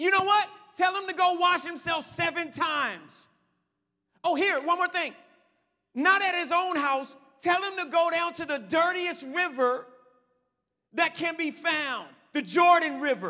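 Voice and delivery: loud shouting.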